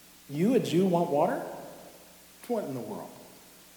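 a little sarcastic, mocking, swooping pitch. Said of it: "she's being a little bit sarcastic".

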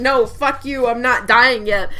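ordinary talk

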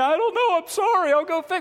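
play-acted weepy, high-pitched, near-tears blubbering. Retelling a young server's reply to an angry diner: imitating someone crying. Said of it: "they're in tears going".

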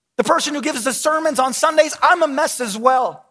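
high, loud, public announcing voice.

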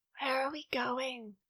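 low-key, soft, quiet delivery. After an hour of silence on the trip, Amy asks quietly. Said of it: "She asked quietly".

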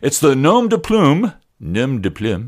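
over-the-top, thick French detective accent. Talking to listeners on air, doing an Inspector Clouseau impression. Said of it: "that's my best Inspector Clouseau impression".

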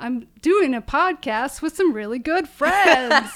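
high, belted, rhythmic delivery. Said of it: "you just have to do it in his voice".

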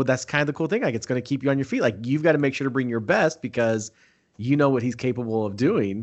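ordinary talk

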